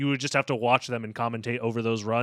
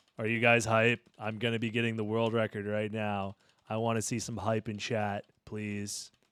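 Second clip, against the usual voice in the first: deadpan monotone with no inflection at all; 2 semitones lower, 5 dB quieter than usual. Asking chat through the microphone if they're hyped, in flat monotone. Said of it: "I love saying into the microphone in a monotone".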